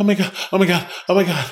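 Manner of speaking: frantic, high, freaked-out panicked exclamations. Recounting standing outside in his bathrobe over a gecko: retelling himself freaking out. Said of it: "kind of like tripping".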